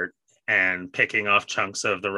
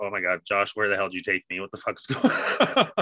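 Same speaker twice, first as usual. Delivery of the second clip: mock horrified voice, acted out. Retelling watching a screaming scene as a kid, in mock horror. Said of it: "Just watching this in horror".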